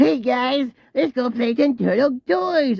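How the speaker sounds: very high stoner cartoon voice, sounding stoned. Mocking the new Turtles toy commercial; stoner Michelangelo voice. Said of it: "he sounds like a stoner".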